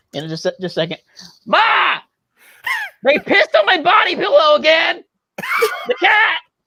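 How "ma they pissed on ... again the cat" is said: very high, slow, swooping, drawn-out sing-song. Doing a requested impression for the others: imitating SWC. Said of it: "this is my, uh, S W C impression".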